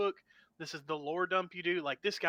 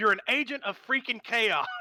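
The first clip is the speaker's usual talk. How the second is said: loud, high-pitched mock raging scream; 5 semitones higher, 6 dB louder than usual. Retelling how the DM started screaming at home: imitating someone screaming. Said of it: "he just starts screaming".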